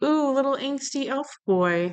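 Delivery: put-on high, swooning, gushing teen-like voice.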